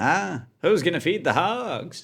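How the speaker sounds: high, drawn-out comic voice. Doing a quick impression before starting jokes: Norm Macdonald impression. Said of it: "That's my Norm impression".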